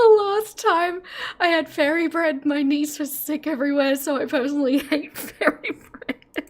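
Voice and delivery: giggling through the words. The speaker has the giggles while telling a story: laughing while talking. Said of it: "I'm crying".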